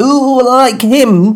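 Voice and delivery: very high-pitched voice with Northern vowels. Retelling a story with another speaker, voicing King Henry in a Northern accent. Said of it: "said King Henry".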